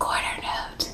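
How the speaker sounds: hushed, very quiet, very soft whisper. Teaching a note name and modeling how to say it, in a whisper. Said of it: "Can you say it in a whisper?".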